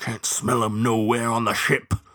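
growled through clenched teeth. Narrator voices the bloodhound answering about the ship, growled through clenched teeth. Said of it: "growled the dog through clenched teeth".

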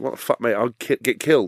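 mock laughing, disbelieving tone. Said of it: "I basically laughed".

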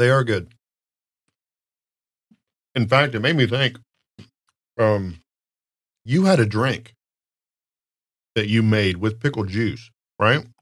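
speaking while chewing, mouth full. Chatting while eating, talking with mouth full. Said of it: "The talking with my mouth full".

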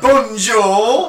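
high, loud, put-on London cockney accent. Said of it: "haven't got to put Del Boy accent on".

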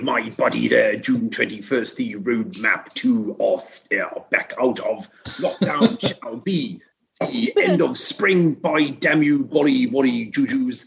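slow, deliberate put-on voice, words drawn out. Giving one last impression for the host: Boris Johnson impression. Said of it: "give one last impression".

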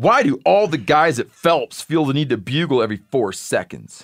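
snide, snarky, sarcastic, mocking delivery. Reading a listener's question aloud the way the asker said it: imitating a snarky asker. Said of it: "can I read it how he said it?".

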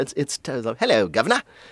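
patently put-on British accent. Mocking how fake someone's accent sounds, in a patently fake British accent. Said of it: "He sounds like me saying".

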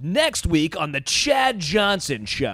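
silly put-on, loud, slow radio announcer voice. Speaker retells a joke made during a ceremony, in a stupid radio voice. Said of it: "in my stupid radio voice".

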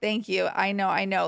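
put-on cold, numb, stunned tone. Retelling a reply to a stranger's rude remark: imitating own cold numb shock. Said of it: "in my cold, numb shock".

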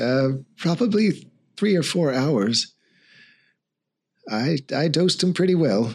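sheepish, embarrassed tone. Voicing a healer asked how long the patient will sleep: sheepish. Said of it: "looks a little sheepish and says".

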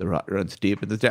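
deadly serious, grave, low and soft. Retelling how Barrett says his line, imitating him very seriously. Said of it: "He says it very seriously".

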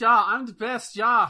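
fake German accent, shrill, very high and loud. In a group conversation, the speaker tries out a put-on German accent. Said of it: "That's your German accent?".

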